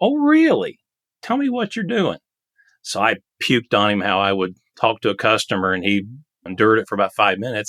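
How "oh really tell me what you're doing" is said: very high-pitched, swooping sing-song. Retelling what Rob said when told this stuff doesn't work, imitating Rob's high-pitched voice. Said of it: "Rob was kind of a high pitched voice".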